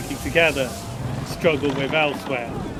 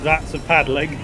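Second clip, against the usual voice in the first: normal talking voice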